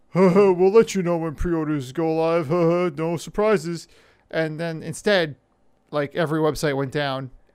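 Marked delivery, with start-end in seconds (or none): 0.2-3.9 put-on smug corporate announcer voice, louder. Acting out Xbox's pre-order announcement: imitating Xbox's smug announcement. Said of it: "I'm gonna read it in the way I read it".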